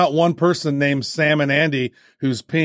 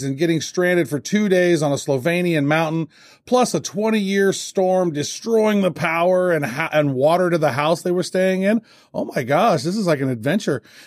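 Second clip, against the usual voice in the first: ordinary delivery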